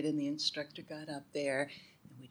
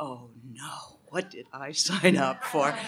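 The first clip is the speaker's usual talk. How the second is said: put-on, mock eye-rolling exasperation, louder; 2 semitones lower, 5 dB louder than usual. Recalling their first-day reaction to a routine, retelling an eye-rolling complaint. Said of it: "I rolled my eyes and said".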